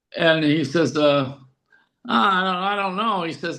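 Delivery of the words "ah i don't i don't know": put-on little whiny voice. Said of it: "with that little whiny voice he has".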